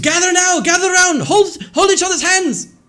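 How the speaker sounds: piercing, very high, loud scream. Voicing a character calling the party to the ship: screaming. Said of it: "he screams".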